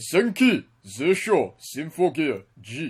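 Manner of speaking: loud, theatrical, swooping, dramatic Japanese accent. Reading out a show title for the others, in a dramatic Japanese accent. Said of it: "read it out in a dramatic Japanese accent".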